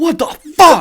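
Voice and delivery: furious, shrill, very high, very loud scream. Describing a gym guy who screams whenever a mistake happens, imitating angry screaming. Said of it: "he's like screaming like angrily in there".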